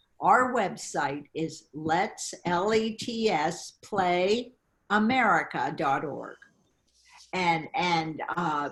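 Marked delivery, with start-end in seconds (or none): 0.2-6.4 slow, clear, deliberate, distinct spelling out. Giving listeners the website address, slowly and clearly. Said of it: "I'm gonna say it slowly and clearly".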